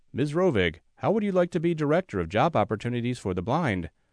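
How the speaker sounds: plain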